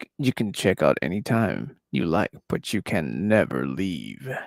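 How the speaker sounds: very deep, grand, dramatic storyteller narration. Repeating the line to show off a narrator voice. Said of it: "that's my best narrator voice".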